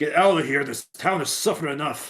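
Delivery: loud roaring orc warrior shout. Roaring at an enemy in the middle of a fight: roaring at an enemy. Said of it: "roars out in Orcish".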